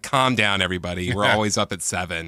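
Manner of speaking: ordinary delivery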